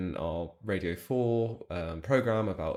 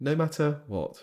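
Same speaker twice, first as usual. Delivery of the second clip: put-on posh accent, higher; 7 semitones higher than usual. Joking along after saying all they do is win: posh voice. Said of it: "Oh God, that was posh".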